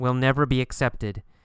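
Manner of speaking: ordinary talk, nothing marked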